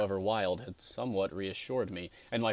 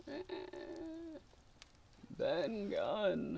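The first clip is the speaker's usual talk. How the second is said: hoarse, creaky, awkward voice, higher and quieter; 12 semitones higher, 8 dB quieter than usual. Reading a story aloud, voicing the castaway: hoarse, awkward voice like a rusty lock. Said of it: "his voice sounds hoarse and awkward like a rusty lock".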